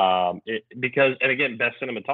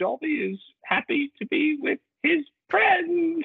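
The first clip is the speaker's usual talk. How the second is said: very high, slow, drawn-out little voice. Retelling a movie death scene in a Dobby voice. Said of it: "You can do his voice immaculate".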